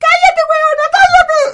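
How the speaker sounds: hysterical scream.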